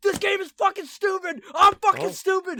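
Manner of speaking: put-on furious yell. Retelling slamming hands on the table while gaming: imitating an angry outburst. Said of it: "I fucking slammed my hands on the table like".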